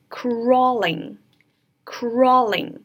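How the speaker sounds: "crawling" drawn out very slowly. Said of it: "先看这个单词".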